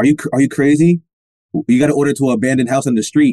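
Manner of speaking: normal talking voice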